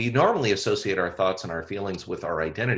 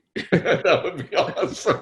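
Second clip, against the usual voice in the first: very high voice with laughter running through; 9 semitones higher, 4 dB louder than usual. In a conversation about retraining mind and body, laughing.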